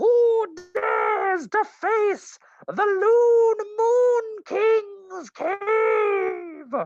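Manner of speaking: shrill, very high-pitched bellowing voice. Game narrator voicing a voice from a cave after players blast the stone; high-pitched bellowing voice. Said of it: "high pitched yet bellowing".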